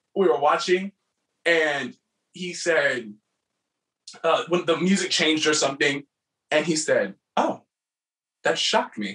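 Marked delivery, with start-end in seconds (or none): 7.3-9.1 calmest possible, dead calm, unbothered voice. Retelling a judge's comment on their performance: imitating Franklin Yu's calm voice. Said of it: "He has the most calm voice I've ever heard".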